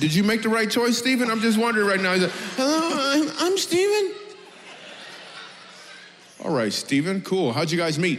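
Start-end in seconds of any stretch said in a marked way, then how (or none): 2.6-4.1 squeaky, very high voice cracking. Tease Stephen, here with his wife, by mimicking his voice cracking as he said his name. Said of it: "Did your voice just crack right now".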